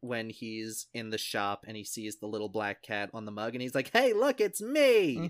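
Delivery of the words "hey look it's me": put-on shrill, very high, very loud pure joy. Quoting a cynical character spotting a cat mug in a shop, with mock pure joy. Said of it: "pure joy".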